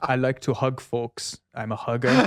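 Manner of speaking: put-on German-accented voice. Reading a hugger's message aloud in a Werner Herzog voice. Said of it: "the Werner Herzog voice".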